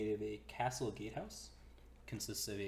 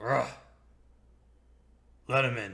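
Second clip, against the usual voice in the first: booming gruff grumble, very loud; 2 semitones higher, 12 dB louder than usual. Voicing someone who hears the party is from the Feathergale Spire: gruff voice. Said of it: "you hear a gruff".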